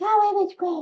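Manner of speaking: squeaky, very high-pitched voice. Retelling answering a radio interviewer outside the bookstore, in a squeaky high voice. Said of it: "in my squeaky high voice".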